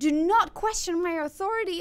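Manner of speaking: screaming at the top of the lungs, extremely loud. Retelling how a man screamed at them about his kid, imitating a man screaming. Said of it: "this man is screaming".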